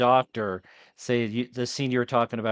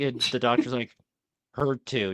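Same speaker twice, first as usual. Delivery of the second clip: ordinary delivery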